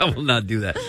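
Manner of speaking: spoken through laughter.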